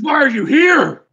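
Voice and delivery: very high-pitched, shrill, acted yelling. Voicing a tall man yelling at the players about his carnival: yelling in character. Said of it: "as he's kinda yelling at you".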